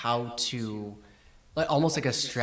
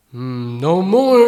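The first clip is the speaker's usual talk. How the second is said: very loud, high-pitched golem voice; 6 semitones higher, 16 dB louder than usual. Playing the golem as it turns around, the speaker answers: golem voice. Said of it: "the golem turns around and he goes".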